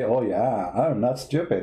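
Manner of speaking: slow woman's voice. Retelling what to have said to the lady at the election: imitating the lady's voice. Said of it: "like her, like".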